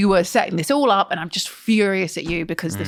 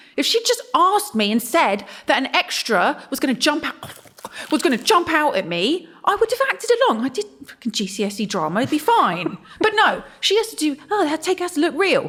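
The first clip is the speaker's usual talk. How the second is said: exasperated, fed-up rant, pitched up; 7 semitones higher than usual. Complaining that she wasn't told an extra would jump out at her, fed up. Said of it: "I think [name] is fed up".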